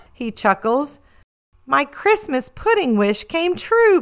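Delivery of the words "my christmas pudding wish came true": delighted, high, joyful exclaiming cry. A young pig receiving her present from santa, crying out. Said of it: "Peppa cries".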